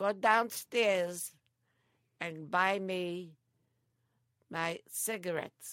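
put-on loud, drawn-out, slow bellow in Greek accent. Retelling what grandfather would say to send her out, greek accent. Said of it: "he would say to me in his Greek tone".

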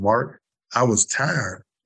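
gentle Alabama Southern drawl. Retelling what a woman from Alabama told him, in a Southern accent. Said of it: "That Southern accent".

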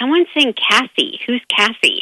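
ordinary talk

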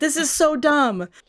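slow, angry, thoroughly annoyed, fed-up voice. Retelling how Ben reacted in a fight: imitating Ben, angry and annoyed. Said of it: "He's so angry. He's like".

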